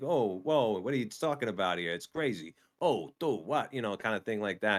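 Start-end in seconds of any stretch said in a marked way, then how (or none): 0.0-3.7 put-on Bronx-style New York accent. Showing what learning a Bronx accent sounded like: Bronx accent. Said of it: "you gotta get that Bronx kinda accent down".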